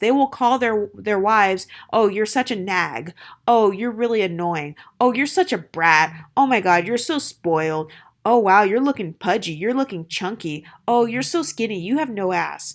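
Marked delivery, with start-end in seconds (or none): 1.9-12.7 mock, put-on, joking and teasing tone. Imitating husbands insulting their wives: imitating a husband's joking insults. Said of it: "say it as if it's supposed to be some sort of joke".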